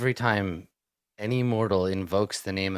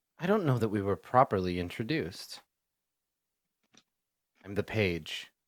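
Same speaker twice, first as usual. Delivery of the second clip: put-on small child voice speaking politely; 4 dB quieter than usual. Game master voicing the page introducing itself to the players, in a child voice. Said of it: "the voice of a, a child".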